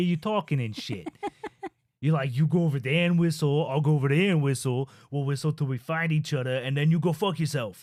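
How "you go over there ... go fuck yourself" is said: exaggerated New York accent. Explaining how New Yorkers sound to them, in a stereotypical New York accent. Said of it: "when I hear New Yorkers talking".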